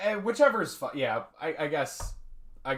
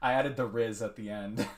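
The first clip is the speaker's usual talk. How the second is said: normal talking voice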